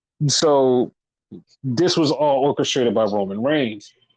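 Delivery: ordinary talk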